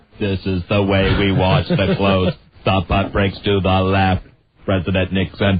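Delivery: robotic, flat, droning monotone. Imitating an actor's exaggerated movie portrayal: robot-like Kissinger impression. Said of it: "He's just turned him into a robot".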